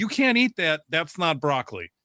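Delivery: mock shout, pitched way up, high and shrill. Retelling a yell at the girls in a cult series: imitating someone yelling. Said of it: "yelling at these girls about".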